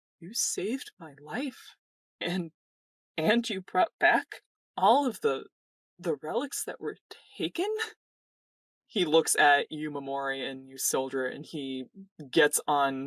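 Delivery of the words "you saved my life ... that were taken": teary, welling-up voice, on the verge of crying. Narrating a tabletop scene, voicing a character thanking two players, tearful. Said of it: "eyes ... start kind of welling up".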